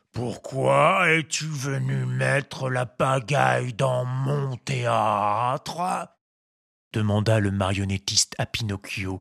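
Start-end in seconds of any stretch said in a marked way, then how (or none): 0.1-6.0 put-on big, rough, congested ogre voice, very slow. A puppeteer questions Pinocchio, big ogre voice with a head cold. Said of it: "d'une grosse voix d'ogre ayant un bon rhume de cerveau".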